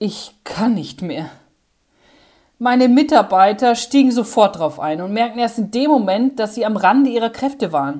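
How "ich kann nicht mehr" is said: acted-out despairing, desperate groan, lower pitched. Retelling running behind the counter with a full tray amid barking dogs, retelling a despairing groan. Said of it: "stöhnte verzweifelt".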